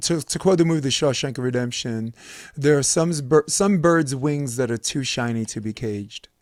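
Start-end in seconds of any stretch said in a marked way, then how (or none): none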